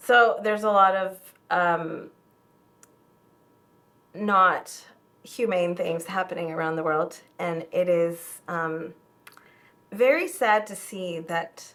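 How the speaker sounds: choked-up voice catching with emotion. Answering a question about why people are protesting, getting emotional. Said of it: "sorry, I'm getting emotional".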